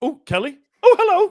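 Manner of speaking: very high-pitched, loud put-on voice. Greeting a third guest who has just joined: very high pitched. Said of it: "I went very high pitched then".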